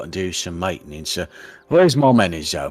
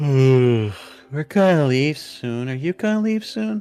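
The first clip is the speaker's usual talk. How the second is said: put-on high, drowsy little girl voice, yawning mid-line; 7 semitones higher than usual. Voicing a little girl who yawns really loud: yawning sleepy little girl. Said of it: "yawns, like, really loud and goes".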